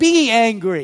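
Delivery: strong stress on both words be angry. Quoting Paul's words to listeners about anger, with emphasis on BE ANGRY. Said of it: "Put the emphasis on be angry".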